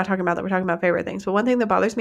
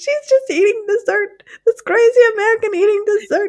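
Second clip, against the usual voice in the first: tittering, giggly voice, raised and very high; 14 semitones higher, 5 dB louder than usual. Retelling what a waiter said when he brought the dish: imitating a giggling waiter.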